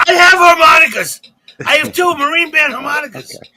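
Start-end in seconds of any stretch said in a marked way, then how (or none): 0.0-1.2 screamed, much louder, slower. During a show gone off the rails, a co-host screams out. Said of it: "He just screams out".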